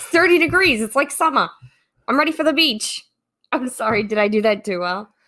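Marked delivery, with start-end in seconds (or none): 0.0-3.0 Boston accent, pitched up. Playing a Bostonian wearing shorts at thirty degrees, Boston accent. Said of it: "Your cousin from Boston".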